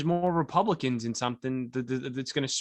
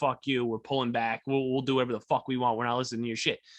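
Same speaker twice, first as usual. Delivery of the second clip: put-on angry, pissed-off tone. Retelling how the counties reacted to the mandate: imitating angry, pissed-off counties. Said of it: "So they're all pissed".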